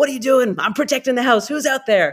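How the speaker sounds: angry barking dog voice.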